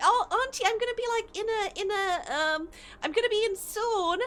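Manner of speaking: put-on tiny cute voice. Retelling a phone call where she says she'll come soon: imitating a tiny cute voice. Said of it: "her, like, tiny, cute voice".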